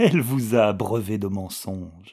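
plain reading voice

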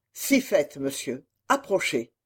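ordinary delivery

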